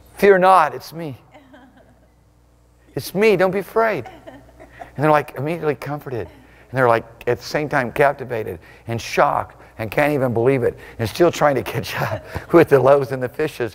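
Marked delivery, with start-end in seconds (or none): 0.2-4.1 mock soothing, gentle, comforting voice. Speaker retells the story, voicing the master calling to the terrified ones: acting out a comforting voice. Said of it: "the comforting voice of the master".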